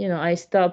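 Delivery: ordinary delivery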